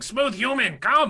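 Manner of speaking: very high, loud hollered yell. In a role-playing game, calling out while the others run off: yelling. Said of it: "I'm just yelling".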